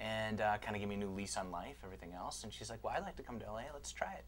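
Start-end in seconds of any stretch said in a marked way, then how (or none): 2.8-4.2 silly little elf voice, high. Retelling what his wife said to him, in a funny elf voice. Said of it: "she said it in a funny voice".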